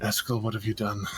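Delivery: weary, fed-up, quick reproachful tone after a sigh. Voicing a character who hears bangs and sighs hard: exasperated sigh. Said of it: "you hear her sigh hard".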